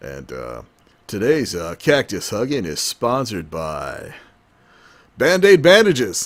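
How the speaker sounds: loud, swooping, put-on sports announcer voice. Joking about a cable sports channel, playing its moderator: put-on sports moderator voice. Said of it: "talk like this on television".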